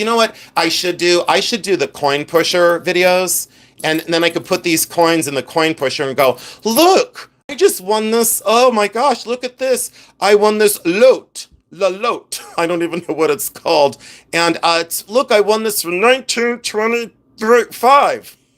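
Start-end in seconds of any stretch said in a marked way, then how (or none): 6.6-18.3 puppet-style character voice. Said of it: "Why did I talk like a Muppet".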